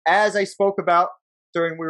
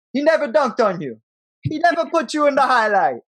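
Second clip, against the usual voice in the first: odd, put-on Jamaican accent, pitched higher; 6 semitones higher than usual. Act out Ewing going on in the background, in Ewing's weird Jamaican accent. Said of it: "His weird Jamaican accent".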